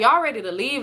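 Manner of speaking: ordinary talk, nothing marked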